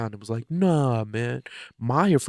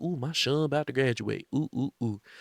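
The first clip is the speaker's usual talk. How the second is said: put-on gleeful, proud, happy gushing exclamation; 4 dB quieter than usual. Retelling a film's opening scene as Tyler: imitating Tyler being happy. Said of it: "being happy".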